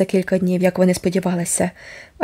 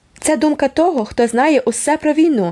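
serious, insistent, earnest, pitched up; 7 semitones higher than usual. Cousin Sofia objects to Susan's mocking reply, seriously. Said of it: "серйозно заперечувала кузина Софія".

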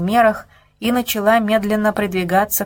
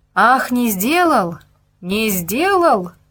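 slow, indignant, aggrieved outcry; 2 semitones higher than usual. Discontented villagers close in on a man who says he did no harm, yelling. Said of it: "завопили на него со всех сторон".

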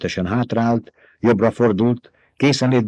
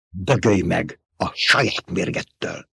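groaned out slowly in a rough whisper; 4 semitones lower, 4 dB quieter than usual. Narrator reads a slave gladiator speaking to his opponent mid-fight: groaning in a rough voice. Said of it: "Nyögte érdes hangon a rabszolga".

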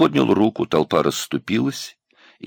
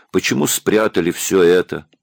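plain

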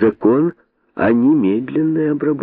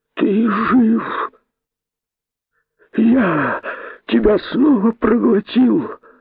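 quavering, trembling, very high-pitched voice; 11 semitones higher than usual. Narrator reading a tale, Kosoy startled to hear the rabbit: trembling voice. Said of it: "сказал он дрожащим голосом".

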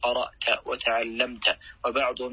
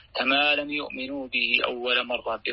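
plain

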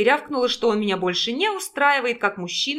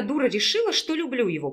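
ordinary delivery

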